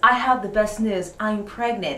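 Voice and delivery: ordinary talk, nothing marked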